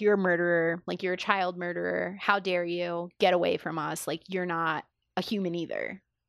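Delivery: ordinary delivery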